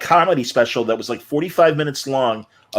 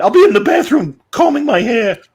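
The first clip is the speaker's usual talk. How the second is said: squeaky, very high, loud put-on character voice; 10 semitones higher, 5 dB louder than usual. Showing a voice after naming the actor: Christopher Lloyd voice. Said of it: "Christopher Lloyd".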